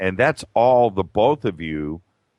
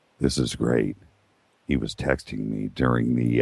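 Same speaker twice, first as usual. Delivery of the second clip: hushed whisper, lower pitch; 11 semitones lower, 3 dB quieter than usual. Filling time while the interview guest steps away: whispering. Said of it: "I don't know why I'm whispering".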